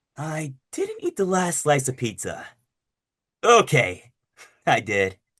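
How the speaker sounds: slightly dragged-out delivery with swooping, swinging pitch. Going through their character voices and showing one, slightly dragged-out voice. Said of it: "just slightly more like dragged out a little bit".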